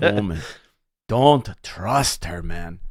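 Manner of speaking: bitter, simmering, spiteful seething anger. Imitating the dad saying woman: imitating someone seething with anger. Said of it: "Seething, seething with anger".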